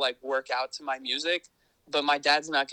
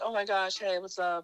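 play-acted, high, all-excited voice; 6 semitones higher than usual. Speaker retells the hosts greeting him as he arrives at the house: acting out an excited greeting. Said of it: "And they're like all excited when I get there".

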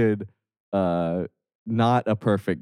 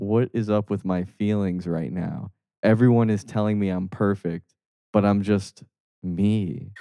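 plain

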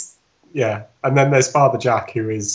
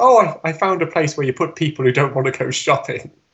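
clumsy, bad put-on Irish accent, pitched higher; 5 semitones higher than usual. Retelling a sitcom scene, quoting Dougal's reply: bad Irish accent as Dougal. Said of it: "our very bad attempt at Irish accents".

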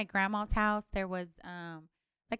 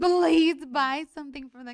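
put-on crying, higher, louder; 5 semitones higher, 7 dB louder than usual. Speaker recalls begging her mom as a child; imitating her past self crying. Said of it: "cry to my mom".

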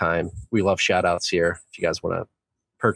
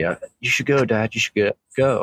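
whisper, slightly higher; 5 semitones higher, 3 dB louder than usual. Joking about what the six-week-old son says: imitating a whisper. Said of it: "he actually whispers to me".

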